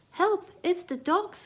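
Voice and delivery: very high, shrill, frightened, squeaky little cry. Reading a story aloud, the narrator voices a frightened mouse squeaking in fright. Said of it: "Squeaked Melissa".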